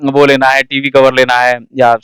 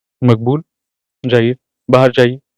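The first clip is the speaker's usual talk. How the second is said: serenely composed, very calm, even voice. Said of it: "बड़े ही शांत तरीके से पंकज जी बोलते हैं।".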